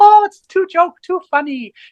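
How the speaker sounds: put-on very high little grandmother voice. Describing a chili's heat as a bee-sized grandmother laughing at you: tiny voice. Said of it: "in a tiny voice going".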